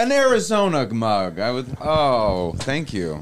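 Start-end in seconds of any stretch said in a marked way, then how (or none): 1.8-3.2 sarcastic-sounding tone. Thanking a friend for a mug: sarcastic-sounding thanks. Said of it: "it still sounds sarcastic now".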